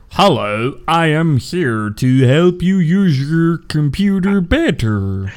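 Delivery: computer-like voice. Joking about what an Xbox would sound like: Microsoft Sam voice. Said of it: "An Xbox would sound like Microsoft Sam".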